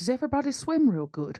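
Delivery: very quiet, high-pitched, secretive hushed voice. Asking the party in character so someone can't hear: very quiet voice. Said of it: "I say very quietly so he can't hear me".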